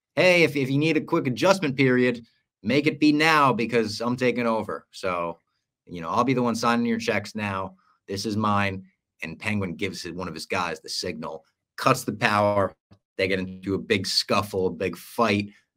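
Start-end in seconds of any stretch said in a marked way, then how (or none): none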